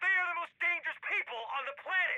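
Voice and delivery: very high, shrill, furious angry screaming. In a heated argument, told to stop yelling: screaming in anger. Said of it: "if you keep screaming like that?".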